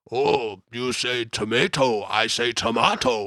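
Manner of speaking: slow monster voice with words drawn out. Listing memorable film performances, quoting Venom in a Cookie Monster voice. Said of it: "this kind of Cookie Monster voice".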